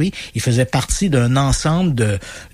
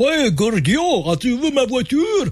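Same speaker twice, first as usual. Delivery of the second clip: very high-pitched, fake, put-on Russian accent; 11 semitones higher than usual. Speaker shows how they dub funny car videos, in a fake russian accent. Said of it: "on double la voix avec une espèce d'accent accent russe".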